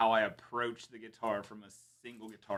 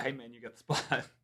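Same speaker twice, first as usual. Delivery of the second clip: mock hushed, whispered, dead-straight flat delivery; 7 dB quieter than usual. Speaker retells telling a man he got the spot, retelling a deadpan delivery. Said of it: "I told him as deadpan as I could".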